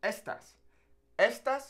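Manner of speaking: ES-tas, weight on first syllable of estas. Contrasting estas with estás for a learner: stress on first syllable of estas. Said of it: "it's estas".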